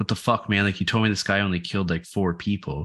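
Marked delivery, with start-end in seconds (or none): none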